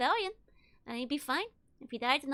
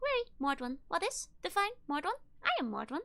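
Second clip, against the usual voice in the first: chirping, chirpy, machine-like robot voice; 3 semitones higher than usual. Reading Nordom's answer after a rapid series of blinks, Nordom chirping. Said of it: "then he chirps".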